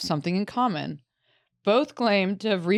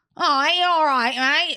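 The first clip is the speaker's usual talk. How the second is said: put-on Northern English accent; 4 semitones higher, 6 dB louder than usual. Mocking how people from Hull talk, put-on Hull accent. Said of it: "the women have the ugliest accents".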